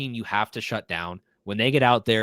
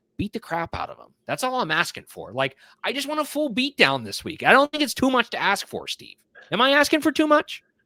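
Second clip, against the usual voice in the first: voice climbing ever higher, very high, swooping; 10 semitones higher than usual. Talking to Steve, the speaker notices the voice getting higher. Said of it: "getting higher".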